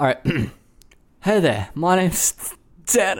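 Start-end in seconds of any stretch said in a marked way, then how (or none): 1.2-3.2 put-on Australian accent, higher and slower. Actor playing Tanner greeting Jane and her friends; Australian accent. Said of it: "That still sounds Australian".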